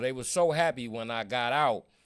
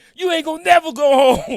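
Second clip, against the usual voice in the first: piercing, shrill, very high, very loud scream; 15 dB louder than usual. Retelling what people banging on cell doors yelled: imitating someone screaming. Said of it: "They screaming".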